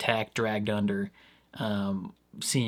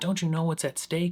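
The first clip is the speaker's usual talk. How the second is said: all mad, hard scolding, pitched up; 7 semitones higher than usual. Retelling what a show character says to Lily: imitating Ronnie being mad. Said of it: "Ronnie being all mad at her".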